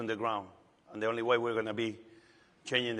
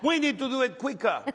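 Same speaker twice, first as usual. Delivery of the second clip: mock girl scream, higher and louder; 14 semitones higher, 6 dB louder than usual. Retelling a young girl on a table shouting sandwich orders: imitating a girl screaming. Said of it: "she kept screaming".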